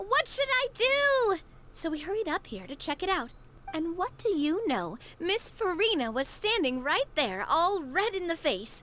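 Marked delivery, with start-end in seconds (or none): 0.0-1.4 mock yelling in distress, high and slow. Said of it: "someone yelling things like".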